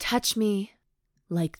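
ordinary delivery

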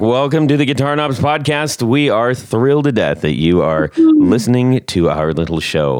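best announcer voice. Welcoming listeners to the podcast: put-on announcer voice. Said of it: "about as announcery as I could".

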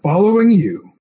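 high, loud shout in a character voice. Answering a rival in character during a fight: in-character shout. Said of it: "And I just shout".

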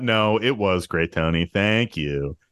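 heavily sarcastic, dripping with sarcasm. Answering a friend who asked to be told his bit was great: sarcastic. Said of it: "I don't need the fucking sarcasm".

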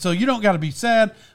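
usual speaking voice

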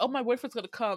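ordinary talk, nothing marked

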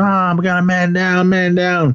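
high, drawn-out scream. Retelling a film scene where a guard finds a man down: imitating a screaming guard. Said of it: "he comes out screaming".

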